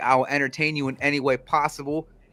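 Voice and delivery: ordinary delivery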